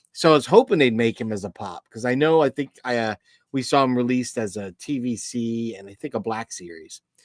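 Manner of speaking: ordinary talk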